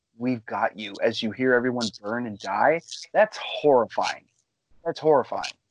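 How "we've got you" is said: quiet whisper, lower. Retelling how the villains guide a crashing pilot: imitating a quiet whisper. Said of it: "they're just quietly whispering".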